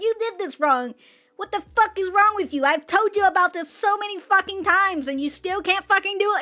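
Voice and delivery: play-acted berating yell with swearing. Describing a person who yells at you for mistakes: imitating someone yelling. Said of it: "a person just fucking yelling at you".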